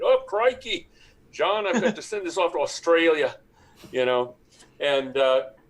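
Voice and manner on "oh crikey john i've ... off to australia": clumsy, bad put-on Australian accent, pitched up. At a shipping company, speaker puts on a bad Australian accent. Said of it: "I do my best Australian accent, which is not very good".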